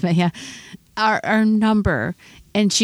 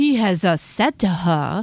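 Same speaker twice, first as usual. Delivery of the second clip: theatrical, classical stage-actor voice and reading. Told to say it like an actor, the speaker reads the line in a shakespearean stage-actor voice. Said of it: "It was supposed to be like Shakespeare".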